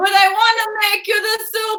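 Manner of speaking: put-on thick, hammed-up Italian American accent.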